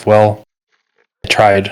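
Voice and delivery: whispered softly, in character voice. Voicing a character muttering privately after a failed attempt: whispering to himself in character. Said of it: "I'm just gonna kinda whisper to myself".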